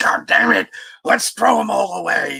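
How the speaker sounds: awful rough, creaky rasp, high and badly done. Imagining what Vince McMahon could say, in a Vince McMahon impression. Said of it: "I'm probably doing an awful impression of him".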